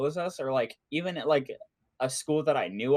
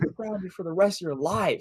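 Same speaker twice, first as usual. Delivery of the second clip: put-on furious rant, higher; 4 semitones higher than usual. Retelling her reaction on finding the bed empty: imitating someone furious. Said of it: "She got so mad at me".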